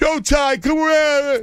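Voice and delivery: yelling. Retelling how they call out to Ty: imitating own yell. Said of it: "how many times do I yell at you".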